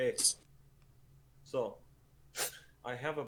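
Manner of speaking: acted quiet whisper. Speaking closely to a character in the game: whispering in character. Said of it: "I kinda whisper".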